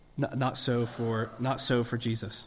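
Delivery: ordinary delivery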